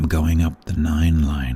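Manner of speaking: whispering. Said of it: "I will whisper it so you don't hear it".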